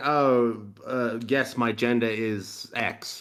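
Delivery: very slow, mocking, sarcastic drawl. Speaker mimics what people now say about their gender: mocking in a sarcastic voice. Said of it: "Like in a sarcastic voice".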